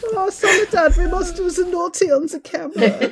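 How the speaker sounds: very high, put-on campy German-accented English. Imitating a film's director after saying the german accent comes out camp: camp german accent. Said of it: "an accent of a German person speaking English without it sounding really camp".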